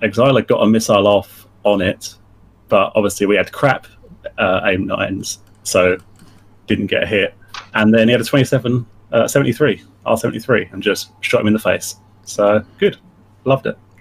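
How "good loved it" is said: dry, sarcastic, mock approving tone. Summing up a fight where a teammate was shot down: sarcastic. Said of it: "I can detect when boys have sarcasm on".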